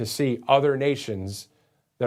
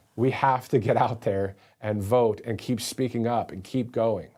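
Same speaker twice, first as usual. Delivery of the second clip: plain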